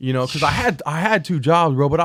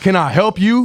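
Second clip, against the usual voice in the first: put-on annoyed, testy, irritated, confrontational tone; 4 semitones higher, 4 dB louder than usual. Retelling asking a staring stranger a question: imitating own irritated question. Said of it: "I'm irritated".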